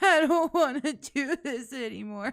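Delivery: fake sobbing. Retelling how the other speaker cried five minutes ago: mock crying. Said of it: "he was sitting there crying like".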